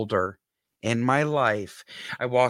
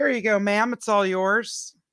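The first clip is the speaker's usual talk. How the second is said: put-on sloppy, very high-pitched young girlish voice; 10 semitones higher than usual. Retelling what a girl said to her after coming out, imitating the girl. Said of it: "not a great impersonation of the girl".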